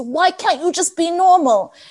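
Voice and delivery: stressed, high-pitched screaming outburst. Retelling a dad in a short screaming at his child: imitating a scream.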